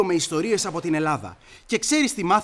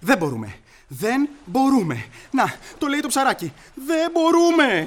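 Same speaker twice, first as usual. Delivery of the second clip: frantic, agitated repeating, rising high-pitched panic; 7 semitones higher than usual. A character reacting to a suggestion from a friend, panicking. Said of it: "Ηρέμησε, Σόσο!".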